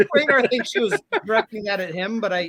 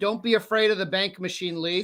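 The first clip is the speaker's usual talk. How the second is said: plain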